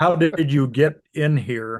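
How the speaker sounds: normal talking voice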